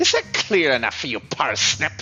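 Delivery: really terrible, awful put-on French accent. Addressing Parsnip while playing a character, really terrible French accent. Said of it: "I am doing a really terrible French accent at the moment".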